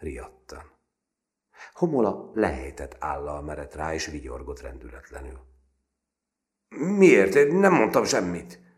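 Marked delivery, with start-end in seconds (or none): 6.7-8.6 stuttering, very high and very loud. Narrator reads M. lying to the grinning Homola: stammering.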